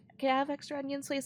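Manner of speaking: put-on soft-spoken voice. Retelling asking the manager for extra onions: imitating own soft-spoken voice. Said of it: "I'm a really soft-spoken person".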